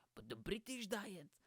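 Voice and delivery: grand documentary narrator voice. Showing how a man speaks without doing him justice, give an imperfect imitation of his accent. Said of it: "this is how he speaks".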